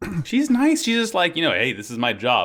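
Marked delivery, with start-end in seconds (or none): none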